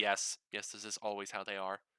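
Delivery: dry, flat, matter-of-fact deadpan delivery. Voicing a character answering a question about two others: deadpan, matter-of-fact. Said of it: "Penny just deadpan matter-of-factly says".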